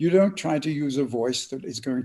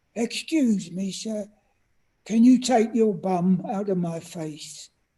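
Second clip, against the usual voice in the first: small, high little voice; 7 semitones higher than usual. In a packed elevator, the speaker retells a little fella's request to him, little voice. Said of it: "I heard a little voice saying".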